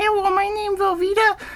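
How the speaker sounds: very high, squeaky little dog voice. Imagining a Pomeranian waddling up and introducing itself, in a Pomeranian voice. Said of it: "that voice".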